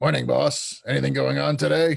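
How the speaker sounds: rough, rasping, creaky, gruff voice. Voicing a tiny pixie greeting his boss: Scarwing's deep gruff voice. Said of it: "speaking with a deep, gruff voice".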